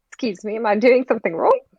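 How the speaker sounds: high, puzzled, taken-aback, bewildered tone. A woman character turning around when addressed, bewildered.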